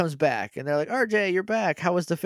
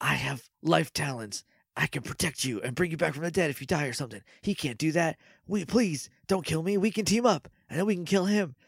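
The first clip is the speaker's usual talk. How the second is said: mock whispering. Retelling a character bartering for his life: imitating someone whispering. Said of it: "he's, like, whispering".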